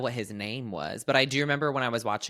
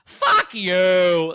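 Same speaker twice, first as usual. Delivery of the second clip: very loud crazy outburst, you drawn out, swooping; 7 semitones higher, 11 dB louder than usual. Retelling how a daughter swore at her mother, imitating her high-then-low intonation. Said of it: "it was like high and then low".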